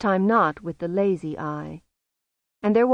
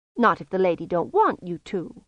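ordinary delivery

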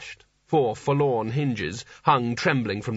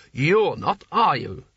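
stern, sharp, pointed, demanding delivery; 3 semitones higher, 3 dB louder than usual. Narrator reads a leader pressing the smallest wizard, sharp. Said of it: "he added sharply".

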